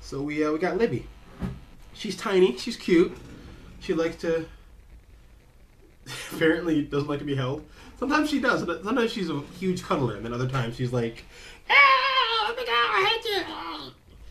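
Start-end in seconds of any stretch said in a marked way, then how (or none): 11.7-13.4 very high, loud, shrill gremlin screech. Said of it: "I don't know why she sounds like that".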